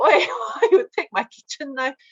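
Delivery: outraged, scolding tone like an upset mother.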